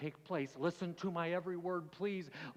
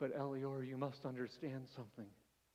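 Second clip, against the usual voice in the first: faint, low, tearful voice; 5 semitones lower, 7 dB quieter than usual. Quoting a man who spoke to him with tears in his eyes, retelling a faint, tearful voice. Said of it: "in a faint voice, with tears in his eyes".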